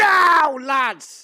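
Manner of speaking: very high, loud shout. Giving a signal to the group in character: shouting. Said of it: "I'm gonna shout".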